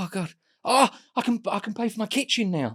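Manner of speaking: mock very high, overjoyed, delighted gushing. Retelling how an actress reacted to a fake scratch card win: imitating someone really pleased. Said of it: "and she was going".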